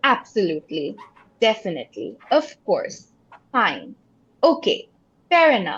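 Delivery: steadfast, strong, emphatic, animated, definite tone. Demonstrating how to express agreement, in a strong, definite tone. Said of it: "we have a strong tone".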